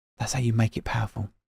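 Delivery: hushed, soft half-whisper. Speaker explaining the power of a close-up film shot, half-whispering. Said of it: "I'm whispering it".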